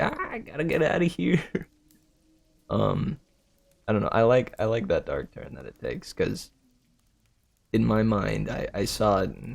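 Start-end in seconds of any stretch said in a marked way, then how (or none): 0.0-1.4 high, screaming cartoon-style cry, screamed out high. Describing a track's dark turn, the speaker acts out imitating Squidward screaming. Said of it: "Squidward screaming and going like".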